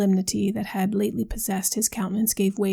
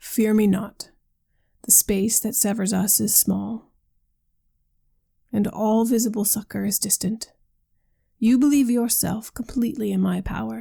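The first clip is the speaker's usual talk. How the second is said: usual speaking voice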